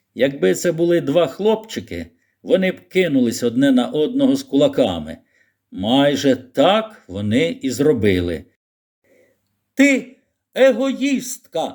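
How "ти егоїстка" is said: piercing, shrill, very high-pitched shout. In a quarrel, a boy shouts at a girl, shouted. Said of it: "крикнув Колін".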